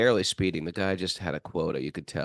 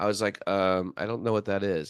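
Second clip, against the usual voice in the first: ordinary talk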